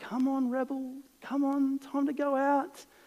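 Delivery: very nice, gentle voice. Retelling how you called the dog to go out the back, retelling a nice gentle tone. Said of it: "with a very nice, gentle tone".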